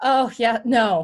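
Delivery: very loud, giggling and laughing through it. Answering whether any lectures or workshops are planned: giggly, laughing while talking. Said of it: "I get really giggly".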